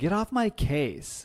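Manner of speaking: put-on drawn-out nineties teen-girl drawl. Describing how a TV character talks: Aphrodite as nineties teenage girl. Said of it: "modern day nineties teenage girl".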